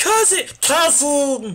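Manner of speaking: very high cartoon alien voice, like a little creature. Voicing Nanako, told to introduce herself to her cousin, do a Stitch impression. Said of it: "my Stitch impression".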